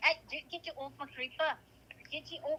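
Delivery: slipping into Scottish accent. Showing how their accent can change, the speaker slips into a scottish accent. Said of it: "It's kind of it's kind of going Scottish now".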